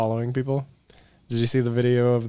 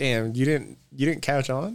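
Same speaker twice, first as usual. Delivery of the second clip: normal talking voice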